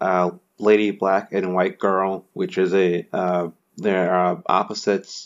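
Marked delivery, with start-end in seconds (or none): none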